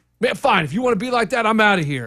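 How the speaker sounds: high, fed-up, angry outburst. Retelling the seller leaving: imitating someone getting mad. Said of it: "And he got mad and he left".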